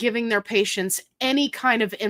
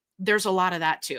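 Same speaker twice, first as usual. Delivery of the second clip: plain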